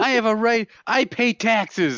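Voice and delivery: very high, slow, drawn-out yelling. Imitating what a friend yells at people: imitating someone yelling. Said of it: "likes to yell at people".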